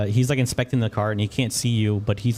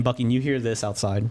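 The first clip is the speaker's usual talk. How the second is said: ordinary talk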